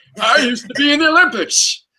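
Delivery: put-on old man jock voice, pitched very high. Discussing how a character should sound, trying out an old man jock voice. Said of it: "Imagine an old man jock".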